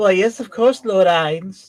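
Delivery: fake high female voice. Imitating the audiobook reader faking a female voice: fake female Albedo voice. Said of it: "fake a f-, a female voice to, you know, Albedo".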